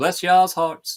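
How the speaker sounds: very high, loud Southern US accent. Showing how a Southern accent slips out: Southern accent. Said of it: "sometimes that Southern does come out".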